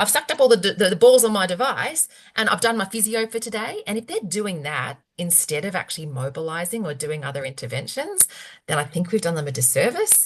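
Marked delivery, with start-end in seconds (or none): 0.0-3.8 terrible put-on Australian accent, pitched up. Acting out what patients say, in a terrible Australian accent. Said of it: "I'm doing a terrible Australian accent here".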